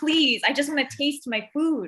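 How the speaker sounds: put-on pleading tone. Retelling ordering a mild curry from the cashier, mock pleading. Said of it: "I'm like".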